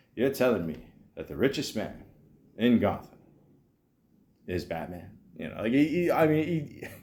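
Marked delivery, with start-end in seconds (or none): 0.2-5.1 put-on voice gradually drifting into a Scottish accent. Quoting a movie scene in a Morgan Freeman impression. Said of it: "this is my Morgan Freeman".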